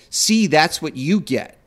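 ordinary talk, nothing marked

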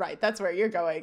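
normal talking voice

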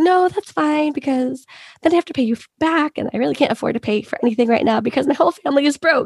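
weird, high, anxious laughter held back. Retelling a woman turning down a man's offer, imitating suppressed anxious laughter. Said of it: "in this like weird suppressed anxiety laughing way".

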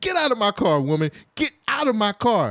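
mock exasperated yell in a man's voice. Retelling a movie scene where a man yells at a woman: imitating a man yelling. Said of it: "And he yells".

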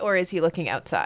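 ordinary delivery

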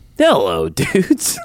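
very high, squeaky put-on character voice. Reading a listener's email greeting aloud in the Dave voice. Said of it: "Should I do it in the Dave voice?".

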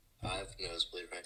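deep, low voice sunk way down. Wrapping up a podcast, answering another host's question: deep voice. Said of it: "you sound deep as fuck right now".

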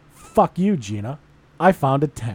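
play-acted proud, boastful, smug gloat, slow. Retelling getting back in the car after buying a tent: retelling own proud gloating. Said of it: "I'm so proud of myself".

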